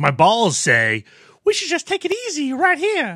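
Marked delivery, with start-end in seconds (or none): 1.4-3.2 put-on toddler girl voice, like age three. Voicing what his balls say, in a voice like a 3-year-old girl. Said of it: "Why do your balls sound like 3-year-old girls?".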